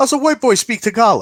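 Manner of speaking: high, loud amazed voice with laughter. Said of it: "He goes".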